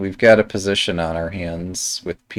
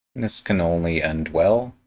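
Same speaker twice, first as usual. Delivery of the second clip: sarcastic tone with a rising end. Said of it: "He says sarcastically".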